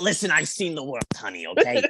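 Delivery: put-on grumpy, raspy old dog voice. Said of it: "She smokes and she just".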